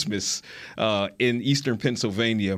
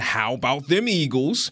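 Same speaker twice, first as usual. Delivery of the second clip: toned-down, acted-out victory whoop; 3 semitones higher than usual. Retelling how a coach ran to the locker room: imitating someone screaming. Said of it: "ran to the locker room screaming".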